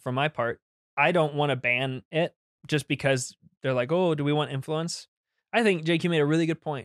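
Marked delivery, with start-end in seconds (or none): none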